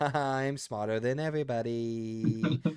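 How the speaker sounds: slow, smug, pretentious, superior self-satisfied gloat. Mocking the writer of a pretentious movie: imitating a smug, pretentious writer. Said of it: "sitting on his computer like this, going".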